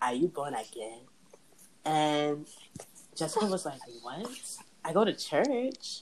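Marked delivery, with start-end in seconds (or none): 0.0-1.0 horrible put-on Igbo Nigerian accent. Retelling what their Nigerian dad asked a visiting friend, in a horrible Igbo Nigerian accent. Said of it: "that's a horrible Igbo Nigerian accent".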